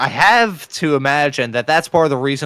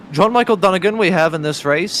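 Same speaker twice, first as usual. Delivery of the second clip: clumsy fake British accent, pitched up; 5 semitones higher than usual. An iRacing broadcaster, apologizing to Howie first, announces a driver in a bad British accent. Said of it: "sounds best with a British accent".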